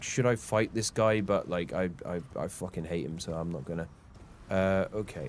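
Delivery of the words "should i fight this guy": usual speaking voice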